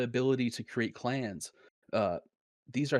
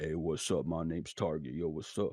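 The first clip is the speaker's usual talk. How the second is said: very deep voice, way down low; 7 semitones lower, 3 dB quieter than usual. Pitching his friend as a game's protagonist, the speaker is imitating Target's deep voice. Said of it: "You got that deep voice".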